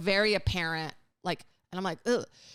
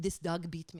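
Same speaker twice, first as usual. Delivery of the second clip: soft, bad, failed fake German accent; 6 dB quieter than usual. Retelling what a German guy said to him, failed German accent. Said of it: "that's not a German accent".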